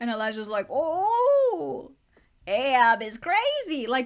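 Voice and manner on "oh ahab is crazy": loud, loopy crazy guy voice, "oh" stretched. Retelling a Moby Dick scene, voicing Elijah as a silly crazy street guy. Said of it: "acting like just a crazy guy on the street".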